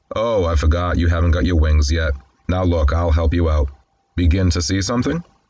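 usual speaking voice

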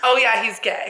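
breezy, nonchalant tone. Retelling what one of the girls said about Colin: imitating Savannah, nonchalant. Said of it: "so nonchalant".

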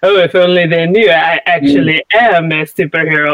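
suave, smooth delivery. Describing the old cartoon's Iron Man character: imitating Iron Man's suave manner.

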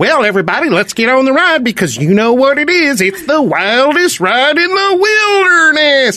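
very high-pitched theme-park ride announcer voice. Standing in line for a ride, addressing everybody: imitating the ride announcer voice. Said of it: "that sounds just like the voice".

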